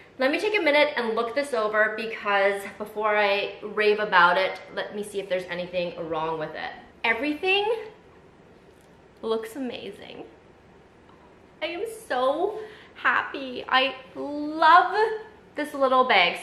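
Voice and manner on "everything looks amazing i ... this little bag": thrilled, gushing delight, high and slow. Looking over a little bag she loves, excited and gushing. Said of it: "I'm just excited and I need to calm down".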